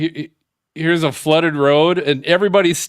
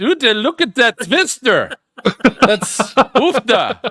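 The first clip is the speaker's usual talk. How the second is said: put-on Dutch accent, pitched up; 7 semitones higher than usual. Asked to repeat the twister video line, in a put-on Dutch accent. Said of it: "say that weather fool again".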